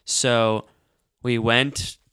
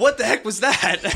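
pitched-up, fake-surprised, startled yell; 11 semitones higher, 3 dB louder than usual. Retelling a classroom moment, acting out what they said: retelling a yell. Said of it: "Like yell".

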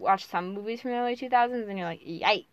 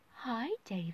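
soothing ASMR-style voice; 10 dB quieter than usual. Retelling a film line to another speaker: imitating Meryl Streep's soothing voice. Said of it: "vocalizing her very soothing voice".

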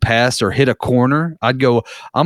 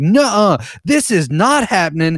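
imitated scream, higher pitch; 7 semitones higher than usual. Retelling how the mom reacted to the guys: imitating someone screaming. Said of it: "just screaming at us".

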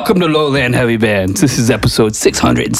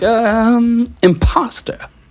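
put-on high, slow English accent. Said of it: "I said it like that with the English accent".

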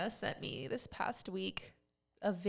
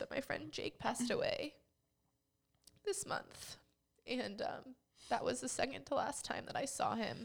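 tearful crying voice; 5 semitones higher than usual. Speaker explains why they are crying, while crying. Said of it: "the reason I'm crying".

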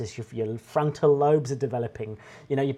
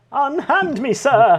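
hammy, put-on theatrics, very high and loud; 11 semitones higher, 7 dB louder than usual. Joking about security after a pitch, showing off acting: put-on dramatic acting. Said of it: "that's my acting".

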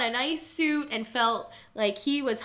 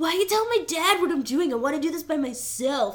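put-on whiny, spoiled sixteen-year-old complaining voice; 4 semitones higher than usual. Recounting a grown man in a movie, mock-whining like a rich teen. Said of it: "he's whining like he's, like, a rich, like, 16-year-old boy".

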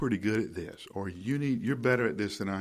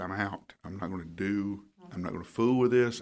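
ordinary talk

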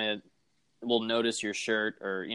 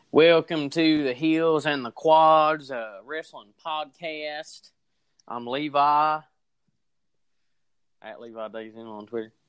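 put-on hillbilly accent, higher; 4 semitones higher than usual. Podcast co-host opening the wrestling show, in a put-on hillbilly accent. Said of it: "I was pretending to be one of the hillbillies".

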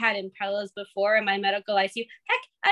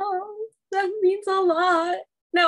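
very high, slow, moved, emotional voice; 10 semitones higher than usual. Answering praise from the other speaker, getting emotional. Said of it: "I'm getting emotional".

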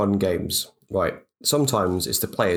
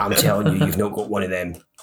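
put-on aggressive voice, much faster. Retelling a card game with their mum, imitating an aggressive mum. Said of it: "she's quite aggressive".

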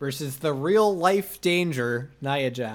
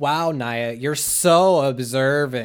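mock, loud, very slow sarcastic drawl; 6 dB louder than usual. Act out Shayna Baszler responding to Nia, in a mock-sarcastic Lois from Family Guy voice. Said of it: "Shayna Baszler responds to her in this fucking voice".

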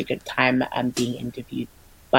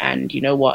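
usual speaking voice

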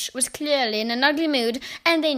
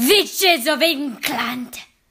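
loud, shouted call; 5 dB louder than usual. The one-eyed witch addresses the gathered witches: shouting. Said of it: "shouted the one-eyed witch".

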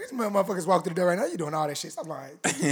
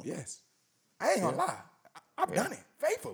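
overly happy, swooping pitch; 3 semitones higher, 8 dB quieter than usual. Answering the group's question about it, sounding too happy. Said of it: "you sound too happy about this".

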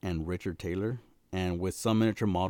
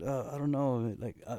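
put-on confused stammering, much higher pitch; 5 semitones higher than usual. Speaker retells a man's reply when a girl asks him on a date, imitating confused stammering. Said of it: "he's like all confused".

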